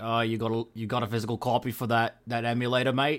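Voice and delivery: put-on failed British accent, sounds Australian. Speaker imagining a british constable knocking on the door, in a bad british constable accent. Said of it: "that sounds like an Australian accent".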